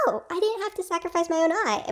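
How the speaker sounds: high, panicked, freaked-out squealing tone.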